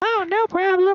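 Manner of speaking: very high, very loud, cartoon-like voice. [name] replying after Leroy thanks him for the healing, Bonnie the dinosaur voice. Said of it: "why do you sound like Bonnie the dinosaur?".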